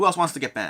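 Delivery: plain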